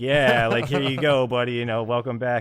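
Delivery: utterly flat, dead, level-pitch monotone drone. Retelling how a passport officer handed back a passport: imitating a monotone passport officer. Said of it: "like the most monotone".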